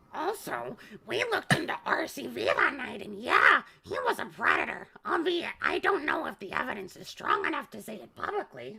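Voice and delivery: high, creaky, raspy put-on voice. Showing how the Marge voice would read the line: Marge voice. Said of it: "The Marge voice would be going".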